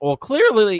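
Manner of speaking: voice breaking, cracking high on clearly. Answering a question about tariffs, voice cracking. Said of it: "voice crack".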